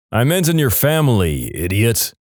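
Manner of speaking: ordinary talk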